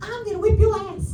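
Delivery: put-on tiny squeaky toddler voice, very high. A teacher quotes a three-year-old boy overheard in the bathroom: little boy's squeaky voice. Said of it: "he has a little squeaky voice".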